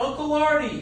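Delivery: very high, shrill hollering yell. Telling a family story, the speaker acts out a cousin calling out; retelling a yell. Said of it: "and my cousin yells".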